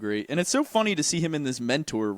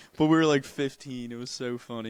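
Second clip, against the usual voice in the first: usual speaking voice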